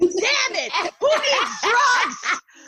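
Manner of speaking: ecstatic cry, high and loud, with laughing shout. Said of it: "I'm like".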